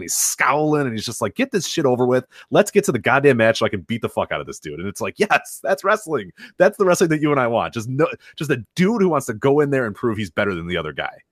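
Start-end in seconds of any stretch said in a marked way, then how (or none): none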